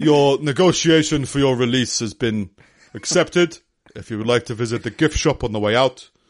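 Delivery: put-on Somali accent. Joking about Somali pirates, the speaker does a Somali accent impression. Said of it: "That's my Somali impression".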